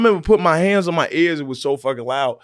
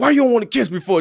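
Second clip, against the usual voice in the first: put-on angry, pitched-up, griping complaining tone; 7 semitones higher than usual. Retelling a dad's complaint when a kiss is refused: imitating an angry dad. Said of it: "my dad was getting mad".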